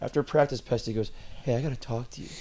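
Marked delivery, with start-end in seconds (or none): 1.4-2.3 quiet whispered voice. Retelling how a teammate pulled him aside after practice: imitating a whisper. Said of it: "whispered to me".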